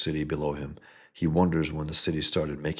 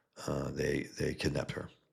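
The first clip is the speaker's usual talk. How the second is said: ordinary talk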